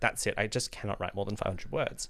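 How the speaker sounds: ordinary talk, nothing marked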